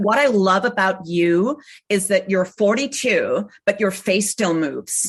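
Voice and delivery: slow, slightly dodgy put-on American accent. Quoting a casting director's comment about the speaker's face, slightly dodgy American accent. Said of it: "I'm going to do a slightly dodgy American accent now".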